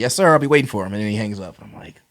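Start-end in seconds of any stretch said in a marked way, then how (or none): 0.0-0.9 very corny put-on fake voice, loud and high. Retelling a phone call with a man, imitating his corny pretend voice. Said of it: "the corniest like pretend voice ever".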